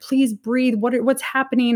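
put-on panicked screaming. Retelling an emergency at home while on the phone with 911, retelling panicked screaming. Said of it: "screaming like".

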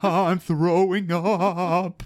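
slow cry with heavy vibrato. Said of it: "really heavy [name] vibrato cry".

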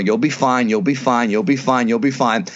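plain

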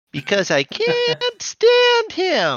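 very high, very slow, swooping sing-song, rising at end. Repeating a cartoon character's line: imitating Emma's high-pitched voice. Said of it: "She says it's so high-pitched".

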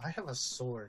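mock mutter under breath. Retelling what Abe said, muttering under his breath. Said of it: "under his breath going".

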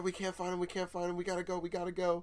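high, put-on frightened screaming. Retell how the actors ran up to you all about Timmy lost in the woods, imitating someone screaming. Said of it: "They're screaming at you".

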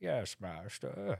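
bad put-on English accent. Imagining being hired as a butler and answering an order, in a pathetic fake English accent. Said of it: "What was that voice you were doing?".

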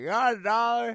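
very high, very loud near-scream. Retelling an odd street encounter, you act out a stranger asking for money, imitating a loud man. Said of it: "Like he was screaming, but he wasn't".

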